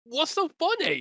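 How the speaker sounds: high, slow, rising, baffled excited voice. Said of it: "I was like".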